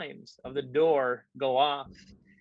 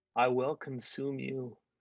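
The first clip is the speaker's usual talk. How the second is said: eerie, creepy, hushed half-whisper right up close; 5 dB quieter than usual. A narrator voices a lunging creature, half-whispering at the listener's face. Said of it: "whispers at your face".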